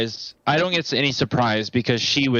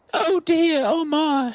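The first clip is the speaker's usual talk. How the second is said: very high, frightened woman's cry. A player voicing a character in the game, in a scared woman voice. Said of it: "the best like scared woman voice".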